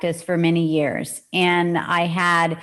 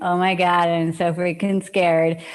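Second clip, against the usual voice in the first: ordinary delivery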